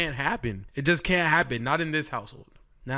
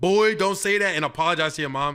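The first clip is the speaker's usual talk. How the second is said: normal talking voice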